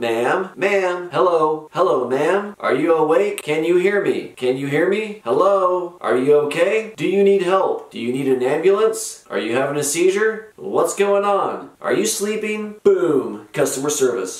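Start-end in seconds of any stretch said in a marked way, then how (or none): 0.0-12.7 loud, repeated calling out. Retelling calling out to a woman to check if she's awake: retelling calling out loudly. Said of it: "So I call out to her".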